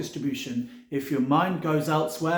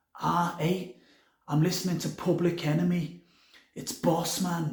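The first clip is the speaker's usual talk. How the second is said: clumsy, bad put-on Scouse Liverpool accent. Retelling what a man said about his music, in a bad scouse accent. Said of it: "in my best Scouse accent".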